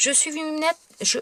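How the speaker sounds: stumbling over the words. Explaining a stamping project, the speaker is stumbling over words. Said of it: "je bafouille".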